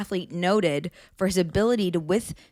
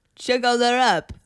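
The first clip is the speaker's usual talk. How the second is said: high, raised, lifted announcing voice; 5 semitones higher, 5 dB louder than usual. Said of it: "in his Wim Hof voice".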